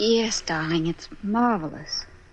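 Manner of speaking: slow, unexcited, unenthusiastic tone. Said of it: "you don't sound very excited".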